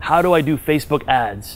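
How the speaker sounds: normal talking voice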